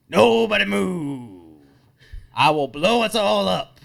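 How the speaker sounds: very loud, high, menacing yell with "move" stretched. Threatening a bar crowd while holding a fake bomb: yelling a threat. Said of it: "this guy just yelling about".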